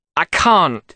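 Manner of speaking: angry, irritable, snapped tone. He speaks to his reflection at his bedroom window, snapping angrily. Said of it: "he snapped angrily".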